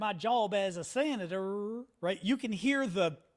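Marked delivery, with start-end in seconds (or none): 0.0-1.8 put-on, mimicked drawl. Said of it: "the drawl".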